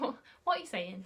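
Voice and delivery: ordinary talk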